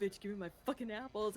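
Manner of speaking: put-on bratty, foul-mouthed little kid voice. Imitating a player in game voice chat: imitating a cussing kid.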